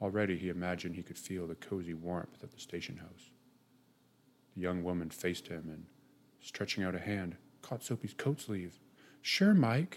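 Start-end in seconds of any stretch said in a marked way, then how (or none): 9.2-10.0 delighted cry, very high and loud. A young woman catches a man's coat sleeve and answers him joyfully. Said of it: "she said joyfully".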